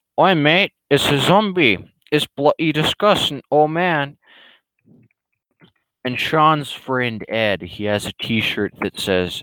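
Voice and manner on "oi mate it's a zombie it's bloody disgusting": jokey put-on British accent, pitched up. Complaining about zombie films, mocking British guys in a mock British accent. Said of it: "British guys being like".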